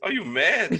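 high, giggly laughing while talking.

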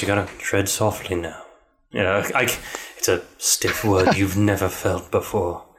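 deep screen-actor voice. Showing a co-host how the line should sound: Sean Bean voice. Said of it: "that's my Sean Bean right there".

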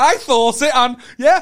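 loud, high, laughing put-on voice. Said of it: "You were like, you know".

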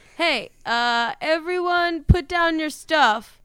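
high, slow shout, calling out across a distance. Playing a character calling to the town square crowd: shouting in character. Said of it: "You're just shouting?".

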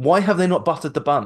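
high-pitched, acted-out hollering shout. Retelling a shout at vloggers on the screen: imitating Donna shouting. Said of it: "Donna literally shouts at the screen".

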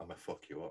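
acted hushed near-whisper. Recalling a favorite wrestling promo said down the camera, imitating a near-whisper. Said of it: "he's almost whispering".

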